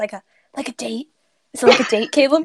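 loud, acted stage whisper. Voicing a character who leans in to ask the prince: half-whispering in character. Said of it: "she whispers".

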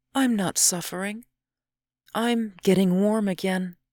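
sleepy. Narrator reading a woman's reply to her companion in a snowstorm, sleepy.

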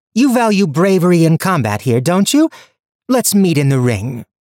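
voice lifted to ring out. Reading a story, Leah answers Corthus across a stadium: raised voice. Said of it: "Her Highness [name] the First, Queen of Damasca".

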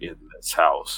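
deep, hushed movie-trailer voice. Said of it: "the lower and lower pitched voice".

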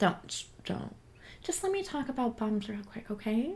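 soft, hushed shushing.

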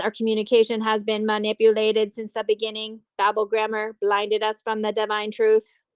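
flat, mechanical, monotone robot voice. Speaker quoting Postmaster Michael, in a robot voice. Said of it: "I don't know why I said that like a robot".

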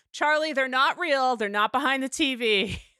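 acted-out yelling. Retelling how they yelled at their curious cat, retelling a yell. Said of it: "And I'm like yelling".

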